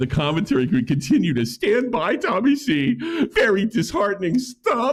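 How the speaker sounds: put-on mocking meme voice. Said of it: "read it in, like, a soy jack voice and laugh while I do it".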